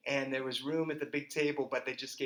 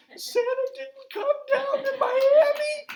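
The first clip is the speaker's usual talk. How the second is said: very high, very slow, drawn-out sobbing wail; 7 dB louder than usual. Telling how the brother found nothing on Christmas morning; imitating Robbie crying. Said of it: "And he burst into tears".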